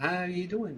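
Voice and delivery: tender, caring motherly tone. Commentator imitating how Lambert asked how you're doing, in a tender motherly tone. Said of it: "mother's tenderly uh, tone".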